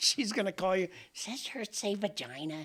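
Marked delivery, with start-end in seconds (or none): 1.1-2.7 sweet, soft, adorable little grandmother voice. Imitating another speaker's grandma reading the shirt aloud, imitating grandma's voice. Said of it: "Is that your grandma voice?".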